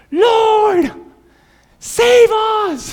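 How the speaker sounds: very high, loud, full-throated yelling cry. Retelling a scene from Mark's gospel of people afraid of dying, retelling a yell. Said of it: "And we're yelling".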